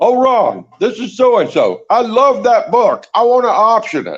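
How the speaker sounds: put-on strong English accent, pitched very high. Author retelling a producer's phone call about his book, in a very english accent. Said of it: "this guy with a very English accent said".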